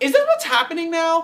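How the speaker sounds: very high, yappy, dog-like pitch. Complaining about a show's ticket rush policy, in a very high voice. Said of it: "I just went really high like a dog".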